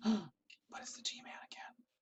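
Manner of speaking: slow, breathy, drawn-out whisper under the breath. Playing a game, the speaker finds a locked door and spots the G-Man, whispering.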